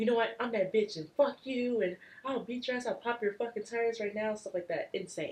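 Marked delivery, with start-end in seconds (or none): 0.0-4.3 put-on high, sobbing, tearful, aggressive drunken tirade. Retelling own drunk outburst mid crying: imitating own drunk angry threat while crying. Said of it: "mid bawling my eyes out".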